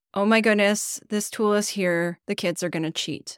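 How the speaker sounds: usual speaking voice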